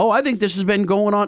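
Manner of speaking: put-on casual Canadian accent. Recounting what a diesel mechanic in Canada told him: Brad's Canadian accent. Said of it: "in his nice Canadian accent".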